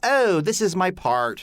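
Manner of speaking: put-on British-American hybrid accent. Demonstrating how some people mixed accents, weird hybrid British-American accent. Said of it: "this really weird hybrid where it's like".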